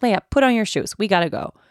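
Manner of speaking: put-on impatient, loud, frustrated voice with an edge. Retelling asking leia again to put on her shoes when late: retelling a frustrated edge. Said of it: "I ask her with an edge in my voice".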